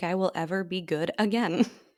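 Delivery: plain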